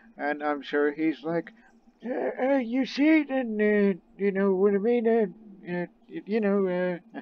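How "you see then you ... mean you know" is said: put-on high, halting old-man voice with fillers. Imitating a renowned physician asked how to cure an illness: old man imitation. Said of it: "That's my old man imitation".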